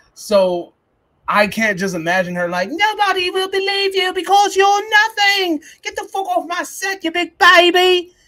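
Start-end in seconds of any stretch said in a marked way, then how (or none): 2.8-8.1 whiny, squeaky British voice, higher. Imagining an actress telling an extra to leave: Mia Goth voice. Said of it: "that's how she sounds".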